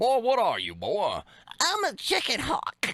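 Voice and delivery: very high, swooping, throaty cartoon voice with swallowed words. Friends trading cartoon impressions while one coaches the other, in a throaty cartoon voice. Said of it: "talking from the back of your throat".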